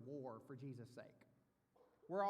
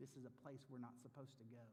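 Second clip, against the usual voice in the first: ordinary talk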